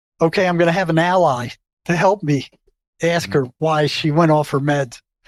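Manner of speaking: ordinary delivery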